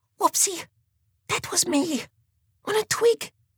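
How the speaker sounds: whispering. Mole, having snapped a twig while the animals sneak past Bear, whispering. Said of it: "Whispered Mole".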